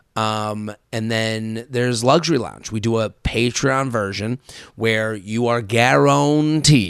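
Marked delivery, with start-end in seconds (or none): 5.6-6.9 put-on old Western cowboy drawl, "guaranteed" stretched out. Describing a Patreon tier, saying guaranteed like an old Western: drawl. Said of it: "I love saying it like that, like I'm in an old Western".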